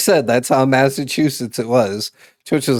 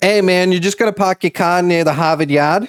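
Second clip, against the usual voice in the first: Massachusetts local accent; 6 semitones higher than usual. Saying a normal Massachusetts sentence to people from elsewhere, in a Boston accent. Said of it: "Boston accent".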